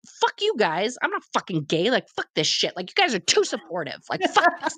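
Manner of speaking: acted angry, offended rant with swooping pitch. Telling how they reacted to overly supportive people, retelling an offended outburst. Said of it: "And then I got like offended".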